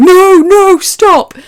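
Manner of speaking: screaming in horror, shrill, very high and very loud. Recalling a horrifying moment in a game, reenacting own screaming. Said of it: "I was screaming like".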